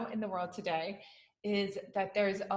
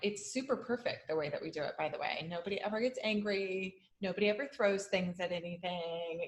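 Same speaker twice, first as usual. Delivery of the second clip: quick, dry, ironic, sarcastic aside. Speaker joking about how their family handles these conversations, sarcastic. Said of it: "hearing the sarcasm in our voices".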